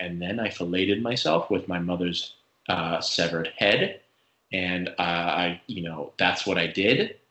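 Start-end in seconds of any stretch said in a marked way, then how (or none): 0.0-4.0 utterly matter-of-fact delivery with zero emotion shown. Quoting an actor's role from those recordings: deadpan Ed Kemper impression. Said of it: "He is like so deadpan in those recordings of being like".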